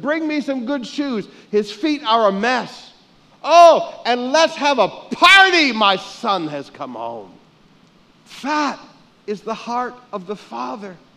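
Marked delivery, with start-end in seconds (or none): 0.0-7.3 shouting, higher and louder. Acting out the father welcoming his son home: yelling. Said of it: "And he yells".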